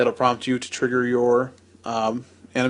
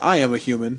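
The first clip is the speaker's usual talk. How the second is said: put-on humanlike ai robot voice. Joking about card art that looks like a rubber-faced tv ai: imitating a humanlike ai robot. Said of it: "the A I they've had on television that has, like, the rubber face".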